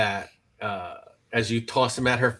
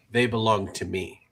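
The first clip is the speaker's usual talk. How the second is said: put-on English with a thick, heavy foreign accent. The narrator voices a woman stepping out of the shadows, in very accented English. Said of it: "she says in in you know very accented English".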